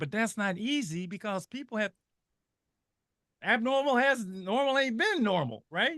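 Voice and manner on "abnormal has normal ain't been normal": high, loud excited burst. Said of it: "I'm getting excited".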